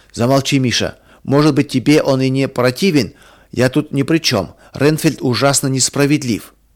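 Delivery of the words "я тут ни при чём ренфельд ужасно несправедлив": plain reading voice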